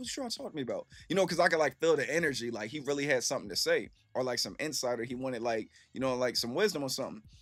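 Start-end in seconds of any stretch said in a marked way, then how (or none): 0.0-0.9 put-on whisper, higher and faster. Recounting asking a coworker about a man in the corner: retelling a whisper. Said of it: "I'm over whispering and shit".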